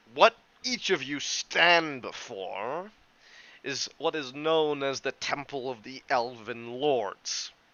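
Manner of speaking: lofty, talking-down, condescending professor-like lecturer tone. A game master voices a character addressing the players, in a condescending college professor voice. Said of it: "puts on his most college professor teaching voice".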